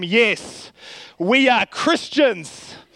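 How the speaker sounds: mock firm, self-assured, strong, confident, slow delivery. A youth pastor retells answering a young man, retelling a strong, confident voice. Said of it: "in a strong, confident voice".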